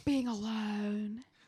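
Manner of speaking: put-on sexy voice. Mocking a movie character's line: imitating Jade talking all sexy. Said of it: "trying to, like, talk all sexy".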